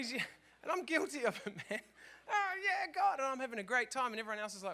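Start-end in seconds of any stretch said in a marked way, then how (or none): 2.3-3.2 very high, loud, worked-up angry yelling. Describing getting carried away in church, the speaker acts out yelling. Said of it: "who's the angry guy yelling at us?".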